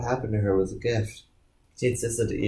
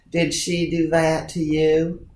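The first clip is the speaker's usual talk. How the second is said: easy, slow, higher-pitched South Carolina drawl; 5 semitones higher, 3 dB louder than usual. Reading a secretary's lines as she questions Ian: Southern Carolina accent. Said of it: "in a Southern Carolina accent".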